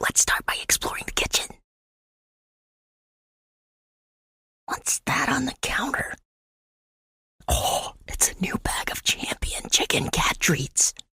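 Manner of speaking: very quiet, soft, hushed, creeping ASMR whisper. Acting an asmr show while the humans sleep: whispering. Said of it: "as long as we're very quiet".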